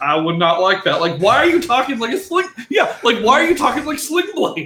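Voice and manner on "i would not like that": plain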